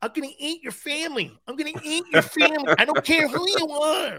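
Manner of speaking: high little squeaky voice. Retelling a Mike Tyson press conference, in Mike Tyson's little voice. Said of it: "A little voice".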